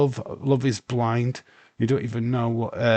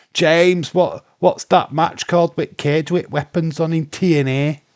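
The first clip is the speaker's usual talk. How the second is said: loud put-on Yorkshire accent; 4 semitones higher, 5 dB louder than usual. Speaker asks James a question, in a Yorkshire accent. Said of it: "My best Yorkshire accent there coming out".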